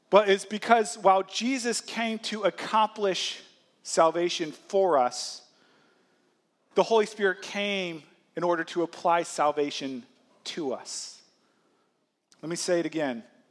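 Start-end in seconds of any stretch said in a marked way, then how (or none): 0.1-11.2 slow, measured, deliberate, unhurried preaching voice. Explaining the Holy Spirit's role, wanting listeners to grasp it: speaking slowly. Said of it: "I'm going to say this slowly".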